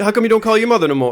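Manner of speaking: put-on video-game style Italian accent. Joking about a video game's English dialogue, in an Assassin's Creed Italian accent. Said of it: "the accent like".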